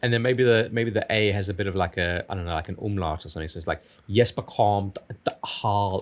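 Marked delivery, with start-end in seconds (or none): 4.1-6.0 speaking with South African accent. Joking about how a name might be pronounced, saying it in a south african accent. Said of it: "you just made that sound South African".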